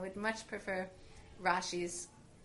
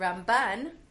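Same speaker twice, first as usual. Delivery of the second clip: Ramban with stress on second syllable ban; 11 dB louder than usual. Telling Ramban apart from Rambam: stress on ban in Ramban. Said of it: "with the stress on the second syllable".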